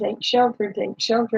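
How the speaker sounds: plain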